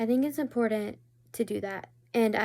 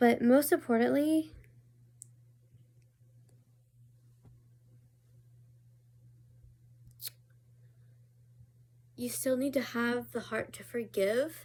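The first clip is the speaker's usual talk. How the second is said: crying while talking, tearful voice. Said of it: "I said I wasn't gonna cry in this video".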